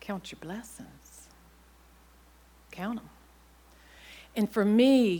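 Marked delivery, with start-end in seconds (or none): 0.0-3.1 put-on whispery, hushed Southern Virginia accent. Remembering a widowed woman's advice, quoting her in a southern virginia accent. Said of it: "in her Southern Virginia accent".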